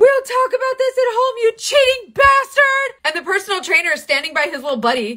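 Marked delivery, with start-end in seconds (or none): 0.0-2.9 put-on very high, shrill, loud hollering. Retelling yelling at him while walking him to the truck: retelling a yell. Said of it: "And I'm yelling at him".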